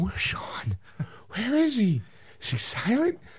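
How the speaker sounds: confused-sounding voice. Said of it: "So everyone's going".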